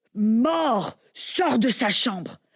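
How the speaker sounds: slow, high-pitched, commanding, authoritative voice.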